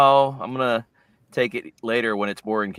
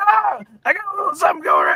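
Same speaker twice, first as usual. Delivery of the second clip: very high, oddly strained, squeezed-out voice; 5 dB louder than usual. Describing a voice actor's performance, doing Dave Matranga's strained voice. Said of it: "weird kinda strain to his voice".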